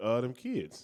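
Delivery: breezy, nonchalant, matter-of-fact, offhand tone. Answering the other speaker's question: said nonchalantly. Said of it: "you just said it so nonchalantly".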